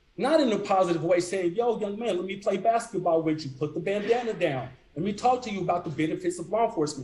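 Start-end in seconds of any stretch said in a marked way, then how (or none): none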